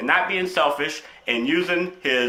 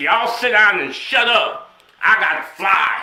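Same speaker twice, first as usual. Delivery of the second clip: put-on loud, slow, bossy drunken voice; 2 semitones higher, 5 dB louder than usual. Acting out an imagined pilot with a gun: acting drunk pilot. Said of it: "He'll be all drunk with a gun".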